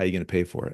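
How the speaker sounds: mock dry, expressionless deadpan, quiet and flat. Retelling how she answered a big fireworks plan, imitating her deadpan. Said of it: "she deadpan looks me in the face and goes".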